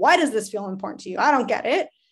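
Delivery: accusatory, dismissive, put-out, blaming tone. Showing the tone to avoid when asking someone a question: accusatory question. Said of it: "it's not very accusatory of like".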